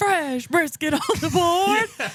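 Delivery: very slow, very high, drawn-out hollered announcer call. Comparing another store, imitating staff shouting an announcement. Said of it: "Like when you go into Buc-ee's".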